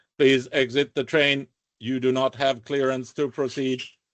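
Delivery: flat, metallic, mechanical announcer voice. Game narrator voicing the train's loudspeaker to the players, metallic loudspeaker voice. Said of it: "a metallic voice that says".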